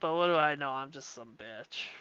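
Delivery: whole line spoken in a nasal voice. Saying a line a friend's girlfriend asked for, in a nasally voice imitating her. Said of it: "in a nasally, like uh type voice".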